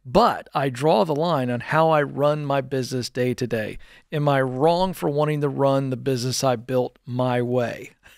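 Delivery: ordinary talk, nothing marked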